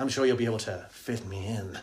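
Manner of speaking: put-on sleazy voice. Retelling a man's reply to a woman, imitating a seedy, horrible tone. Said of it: "he says it dead seedily and horrible".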